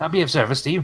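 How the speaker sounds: put-on older halfling character voice. Voicing an older halfling who greets a traveler: older halfling voice. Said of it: "older, uh, halfling ... comes up to you".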